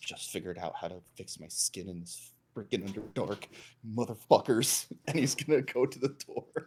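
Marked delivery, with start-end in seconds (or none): 0.0-4.9 grumbling, muttering quietly under the breath. In a tabletop game, a storming character heads to the house; muttering under his breath. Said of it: "muttering under his breath".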